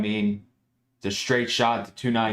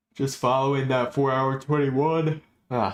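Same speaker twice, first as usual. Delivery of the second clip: words broken up by a yawn; 4 semitones higher than usual. Going through stocks one by one on a chart, yawning while talking. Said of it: "I keep yawning".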